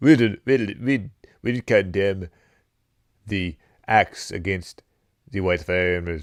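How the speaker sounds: terrible, bad put-on South African accent. Acting out the president of South Africa talking to Trump, in a bad South African accent. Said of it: "I got a terrible South African accent".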